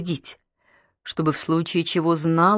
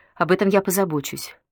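ordinary delivery

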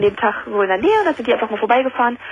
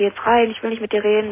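plain

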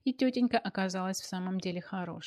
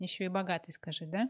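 ordinary delivery, nothing marked

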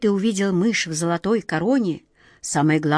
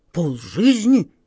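startled, taken aback. Narrator reading the red nose's reply to Aunt Okh, startled. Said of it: "вздрогнул рыжий нос".

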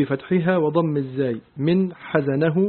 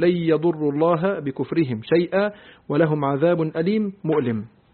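ordinary talk, nothing marked

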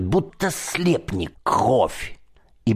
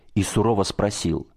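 plain

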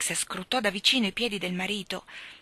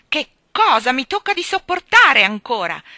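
high, very loud, full-throated yell; 6 semitones higher, 13 dB louder than usual. A man pacing the hall and kicking the furniture, shouting. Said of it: "Gridava agitando selvaggiamente le braccia".

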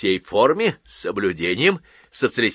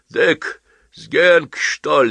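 heavy puffing, much higher and louder; 5 semitones higher, 5 dB louder than usual. Asked whether he knows a man, he answers: puffing heavily. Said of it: "сопел Рыжий".

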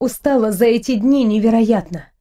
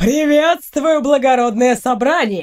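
derisive, taunting, mocking tone. Doiler Lemon suddenly appears in the meeting hall just before attacking, mocking. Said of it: "насмешливо произнес Лемон".

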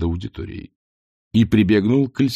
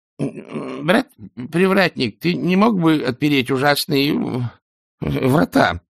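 trembling, shaky, quavering voice; 7 semitones higher than usual. Brother Kalancha asks the gatekeeper to open the gate: trembling voice. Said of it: "дрожащим голосом произнес он".

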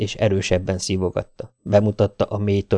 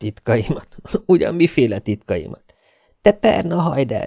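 words spoken through laughter, pitched up; 5 semitones higher than usual. A man answers the woman's question, laughing. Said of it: "Mike nevetve megemelte a fejét".

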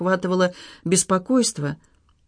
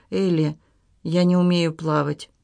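ordinary delivery

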